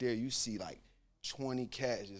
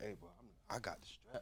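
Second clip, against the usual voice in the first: very quiet, barely audible whisper; 14 dB quieter than usual. Retelling telling the others during a search: retelling a whisper.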